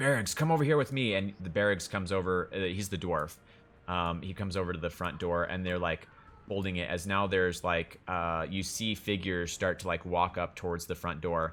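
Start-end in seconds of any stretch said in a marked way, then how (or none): 0.0-1.1 mock shout, fast and high. Retelling a story, the speaker acts out a character yelling at the dwarf Barraggs. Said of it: "he also yells at Barraggs".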